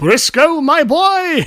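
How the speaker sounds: big, very loud, very high enthusiastic voice. Recalling a man greeting him in front of everybody, big loud Zimtron voice. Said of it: "Real big and loud".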